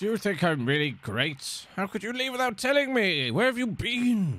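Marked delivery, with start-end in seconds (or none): 1.8-4.4 shouting in character. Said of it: "You don't need to yell at me".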